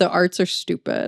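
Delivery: ordinary talk, nothing marked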